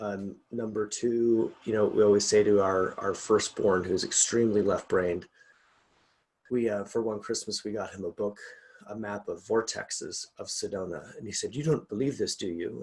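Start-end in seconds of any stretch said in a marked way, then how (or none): 11.5-12.8 put-on German accent. Retelling what her firstborn son asked about a Christmas gift, in his German accent. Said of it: "like in his German accent".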